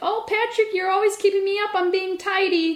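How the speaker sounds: put-on very high, sweet, doting old-lady granny voice. Retelling what an old lady would say when she found him: imitating a sweet old lady. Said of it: "really sweet".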